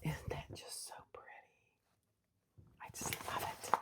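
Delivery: hushed whisper. Admiring a finished piece during a sewing tutorial, whispering. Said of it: "I know I'm whispering".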